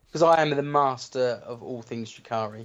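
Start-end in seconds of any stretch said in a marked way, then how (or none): none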